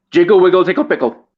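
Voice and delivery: very fast, rapid-fire delivery. Trying a tongue twister from a book again, said real fast. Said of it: "Say it real fast".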